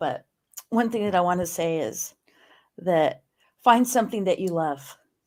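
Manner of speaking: choked-up, emotional, voice catching. A speaker sharing advice with listeners, choked up. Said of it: "I'm a little choked up".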